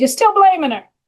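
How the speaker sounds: attempted New Jersey accent. Quoting what their recovery sponsor said to them, in a New Jersey accent. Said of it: "That's the best New Jersey accent I got".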